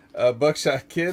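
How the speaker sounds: plain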